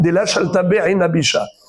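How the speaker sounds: normal talking voice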